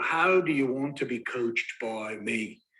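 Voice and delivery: put-on unhurried English-accented voice. Recalling a workshop speaker's coaching questions, Rich Litvin's English accent. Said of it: "he had an English accent".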